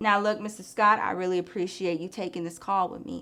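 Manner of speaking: unnervingly calm, even, emotionless, neutral voice. On a call about the vehicle with Mister Scott, crazy calm, neutral voice. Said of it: "My voice gets very neutral. I wouldn't say monotone, just neutral".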